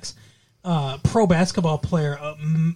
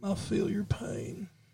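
breathy, slow, hushed near-whisper; 4 semitones higher, 14 dB quieter than usual. Trying a Bill Clinton impression: Bill Clinton impression. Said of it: "Can I do Bill Clinton?".

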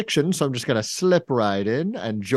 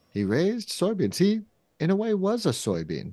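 put-on, preachy, sermonizing priest voice, pitched up; 7 semitones higher, 3 dB quieter than usual. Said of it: "I'm a priest from the Tofu Catholics".

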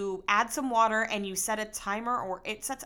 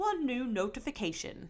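soft, put-on English accent; 2 semitones higher, 5 dB quieter than usual. Explaining how their speaker announces deliveries, imitating Alexa's English accent. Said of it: "maybe I shouldn't pretend to do an English accent".

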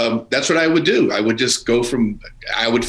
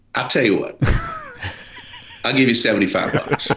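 put-on Southern US accent. Retelling a mechanic's lowball offer for a broken-down car: imitating a Southern accent. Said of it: "a Southern accent".

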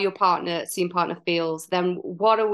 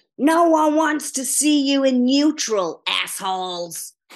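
put-on broad Chicago accent, laid on thick; 6 semitones higher, 3 dB louder than usual. Recalling a favorite anecdote about a woman, the speaker quotes her in a broad Chicago accent. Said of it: "in a broad Chicago accent".

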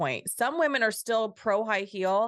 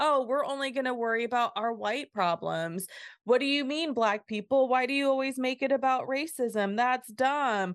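scornful, mocking put-on caricature voice; 4 semitones higher than usual. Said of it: "Did you like my face when I did that voice?".

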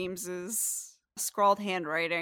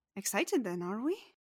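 wry, quizzical, eyebrow-raised, quieter; 4 dB quieter than usual. Narrating a scene where she puts the tray down, wry, eyebrow-raised remark. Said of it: "she'll kind of raise an eyebrow".

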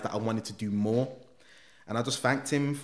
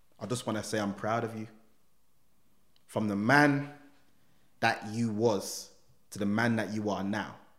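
ordinary talk

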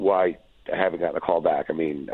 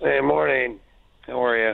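sounding down, higher; 5 semitones higher than usual. Greeting the hosts as a caller on the morning show: sounding bummed. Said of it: "You sound so bummed".

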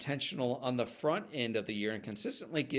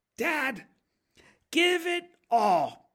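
put-on very high, loud little-kid voice, blurted; 14 semitones higher, 9 dB louder than usual. Retelling a child's answer to his dad, imitating a child speaking loudly. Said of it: "into the built-in microphone every child speaks into".

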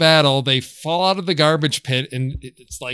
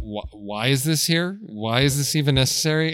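normal talking voice

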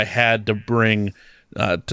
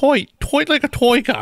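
put-on Dutch accent, much higher pitch; 14 semitones higher than usual. Asked about an accent, the speaker tries Goldmember's Dutch accent. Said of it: "that was trying to be Dutch".

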